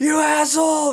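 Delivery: mock yelling. Retelling a guy yelling from the sidewalk: imitating a guy yelling. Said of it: "yells from the sidewalk".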